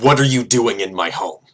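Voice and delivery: loud, resounding booming voice. Game master voicing a creature confronting the party in its home, booming voice. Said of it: "it again just booms".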